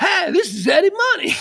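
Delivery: over-the-top, oversold, very high voice. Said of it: "he just sounded so".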